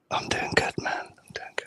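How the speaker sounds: hushed, very soft, barely voiced whisper. Greeting the others at the start of a stream, whispering. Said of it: "Is there a reason you're whispering?".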